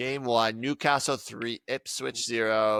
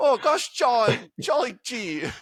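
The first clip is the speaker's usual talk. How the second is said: fake British accent, very high, shrill and loud; 13 semitones higher, 6 dB louder than usual. Imitating a man who tried to get upset but couldn't: fake british accent. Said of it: "That was my fake British".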